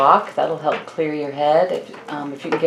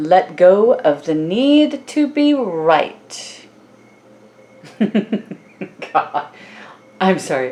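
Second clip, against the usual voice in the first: talking with words broken up by laughter; 3 semitones higher than usual. Reading an oracle card for Cancerians, laughing. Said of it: "I'm laughing at that".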